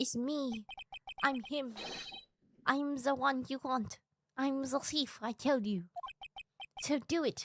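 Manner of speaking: put-on French accent. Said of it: "Not my French accent!".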